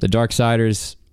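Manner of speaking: ordinary talk, nothing marked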